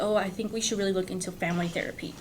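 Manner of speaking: ordinary delivery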